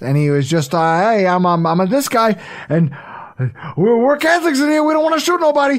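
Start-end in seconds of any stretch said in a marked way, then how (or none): 1.0-5.8 pitched-up, halting, stumbling early-career screen delivery. Retelling a comedy bit about early films: early Al Pacino voice. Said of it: "talking like this".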